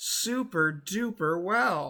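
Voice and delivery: dry, sarcastic tone. Describing how the school handled covid to another speaker: sarcastic. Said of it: "Is that sarcasm I smell?".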